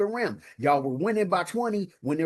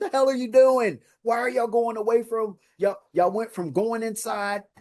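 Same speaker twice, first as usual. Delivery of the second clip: high, mild, held-back yell; 5 semitones higher than usual. Retelling watching the game on the phone: retelling screaming at phone. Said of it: "I was screaming at my phone".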